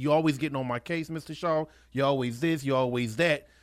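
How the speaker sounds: ordinary talk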